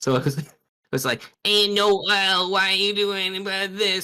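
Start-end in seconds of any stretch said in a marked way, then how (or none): 1.4-4.0 nerdy voice, very high and squeaky. Streamer recalling voicing Berdly while playing Deltarune, Berdly as a Reddit mod voice. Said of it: "gave Birdley like a Reddit mod voice".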